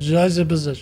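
mock drunk-sounding voice. Imitating a game character who sounds drunk: imitating a drunk-sounding voice. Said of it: "He just sounds drunk".

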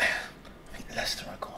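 hushed, unsure, very quiet, breathy whisper. Predicting which football team goes down, unsure: whispering. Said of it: "I'm whispering it 'cause I'm not sure".

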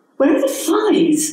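cross, pitched way up. Cecily, exasperated, calling over a young woman at the fridge; demanding crossly. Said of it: "She demanded crossly".

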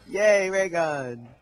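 sarcastic fake cheer and excitement. Reacting to getting a ray gun in the game: sarcastic fake cheer. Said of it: "I'm saying, like, sarcasm".

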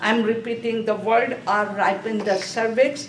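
ordinary delivery

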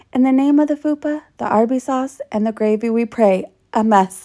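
ordinary talk, nothing marked

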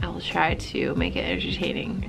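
soft, tired, low-energy voice. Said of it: "my energy is very low today".

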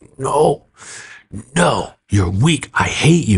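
put-on slow, deliberate, contained, held-back yelling. Retelling how a man held down by his feet yelled at a pastor, mock yelling. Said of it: "And he's yelling".

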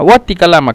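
normal talking voice

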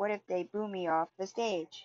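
ordinary delivery

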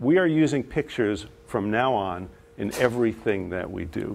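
ordinary delivery

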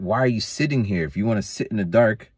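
griping, scolding, yelling tone. Recounting a man yelling at the speaker on coming back home, retelling his yell. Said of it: "he's yelling at me".

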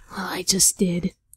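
low, hushed, quiet, raspy voice. Joking about picking up sand by hand at a convention, the speaker answers: raspy Gaara voice. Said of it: "Why are we doing raspy voices now?".

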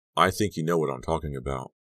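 ordinary delivery, nothing marked

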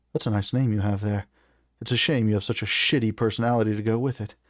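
ordinary delivery

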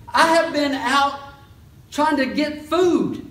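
very high, loud, frantic voice.

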